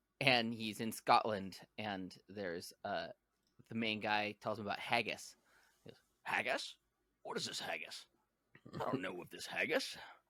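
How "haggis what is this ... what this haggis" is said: low, swooping put-on Spanish accent. Retelling a movie scene about haggis: Sean Connery impression. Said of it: "Sean Connery do a Spanish accent".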